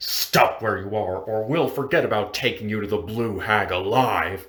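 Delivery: deep, growling wolf-creature voice. Narrator voicing an unseen creature in the darkness: deep, wolfish growl. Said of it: "A deep, wolfish voice growls".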